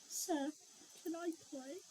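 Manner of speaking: very quiet, hushed, terrified voice, scared stiff. A game character walks up to another character asking to play, quiet and terrified. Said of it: "very quietly and terrified out of my mind".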